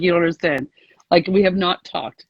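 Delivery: ordinary talk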